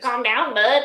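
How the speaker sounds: put-on backwoods country accent. Mimicking how the other speaker says "calm down, bud": imitating the other speaker's accent. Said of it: "That's how you literally sound".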